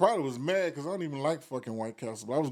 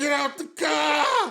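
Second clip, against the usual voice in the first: mock very high, very slow, loud tantrum yell; 12 semitones higher, 6 dB louder than usual. Retelling challenging two guys to a fight in a parking lot: imitating own angry tantrum. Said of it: "You was having a tantrum".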